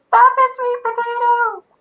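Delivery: very high, tiny, itty-bitty little shout. Retelling a scene where the doctor sees two apes attacking: tiny yelled voice. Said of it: "yells out in her tiny itty bitty little voice".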